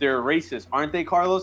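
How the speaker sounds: normal talking voice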